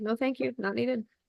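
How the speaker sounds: soft, quiet inner voice.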